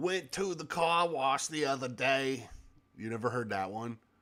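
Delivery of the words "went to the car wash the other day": put-on Jersey guy accent in a voiceover style. Describing a hated ai voiceover, the speaker imitates it: imitating a jersey accent. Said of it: "a Jersey guy".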